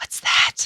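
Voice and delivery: small, breathy whispered voice. Retelling a movie preview where a little boy points up: imitating a whisper.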